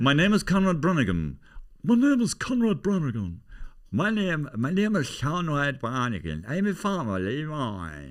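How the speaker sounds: put-on deliberate, slow, sing-song Irish accent, stretched out. Imitating an actor's film lines after praising his accent: Pierce Brosnan's Kerry accent. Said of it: "he got it close enough, Pierce".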